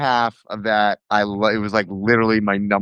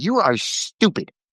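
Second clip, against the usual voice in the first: put-on blunt, scolding old lady voice, pitched up; 7 semitones higher than usual. Describing a little old lady who would berate people, imitating her berating. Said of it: "She'd just be like".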